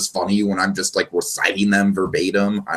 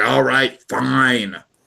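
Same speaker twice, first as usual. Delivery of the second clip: mock reluctant, grudging tone; 4 semitones higher than usual. Retelling a comedy scene where Archie gives in, Archie reluctantly agreeing. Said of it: "reluctantly agrees".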